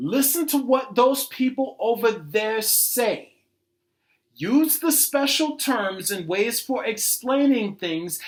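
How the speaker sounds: slow, deliberate, spelled-out delivery. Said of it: "I'ma say this real slow".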